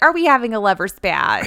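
put-on real Midwestern accent, high-pitched mom voice. Quoting the mom walking into the room: imitating Mom with Midwestern accent. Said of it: "I just made her real Midwestern".

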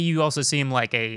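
plain

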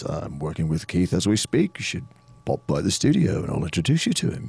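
low voice with swooping pitch. Retelling the studio invitation from a man you were talking to, imitating his low voice. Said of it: "in his low voice".

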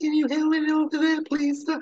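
very high-pitched squeaky voice. Describing a character whose one element is her voice: Hooks' squeaky voice. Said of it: "she has a squeaky voice".

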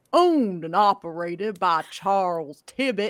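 deep voice booming through space. Narrator voicing another voice that echoes through the whole space, booming voice. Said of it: "suddenly booming through the whole space".

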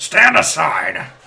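booming, very loud, rough gravel-edged voice. Game master narrating a scene, voicing someone calling from outside in a gravelly voice. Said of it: "you hear a sort of a gravelly voice say".

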